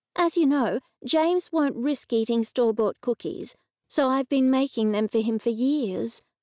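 ordinary delivery

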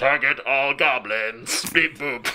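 mechanical robot voice. Player in a game doing a performance aimed at goblins: robotic voice. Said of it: "in a robotic voice say".

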